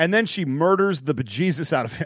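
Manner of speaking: ordinary delivery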